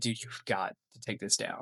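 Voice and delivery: breathy, begging, pleading whisper. Retelling asking a friend to take a video down: retelling own begging. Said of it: "And so I'm begging Moses".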